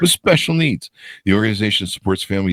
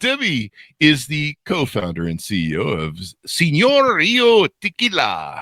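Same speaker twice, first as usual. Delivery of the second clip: bad, fake Mexican accent, pitched higher; 6 semitones higher than usual. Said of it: "my bad Mexican accent, evidently".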